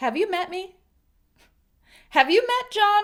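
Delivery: sarcastic, with a high tone. Explaining the sarcastic use of a question with an example, sarcastic. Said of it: "when it's said sarcastically".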